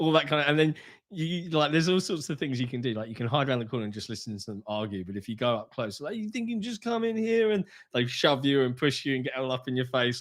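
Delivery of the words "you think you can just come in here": put-on very high New York accent. Imitating game characters who shove the player: stereotypical New Yorker accent. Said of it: "very stereotypical New Yorker accent".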